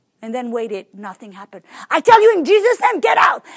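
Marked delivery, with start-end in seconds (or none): 2.4-3.4 put-on exasperated shout, higher, louder, pushed harder. A speaker retells commanding a demon to leave and growing frustrated; retelling a louder, frustrated command. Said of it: "My voice got louder".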